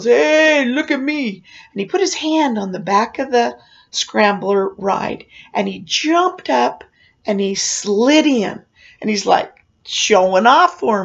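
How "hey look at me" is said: acted high, drawn-out show-off yell. Retelling how a guy showing off on the ride yelled to you: retelling a yell. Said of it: "then he yells".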